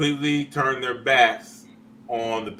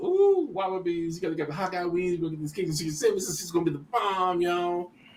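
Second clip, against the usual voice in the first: mock boasting, higher and quieter; 6 semitones higher, 4 dB quieter than usual. Retelling earlier praise of the wings: imitating own past bragging. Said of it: "'Cause I've been bragging about".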